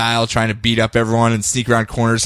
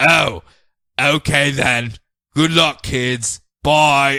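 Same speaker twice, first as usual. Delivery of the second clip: very slow, deliberate, every word drawn out; 3 semitones higher than usual. Retelling a scene where a badly disguised Alfred greets the kids: Alfred voice. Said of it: "And he's like".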